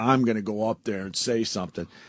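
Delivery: ordinary delivery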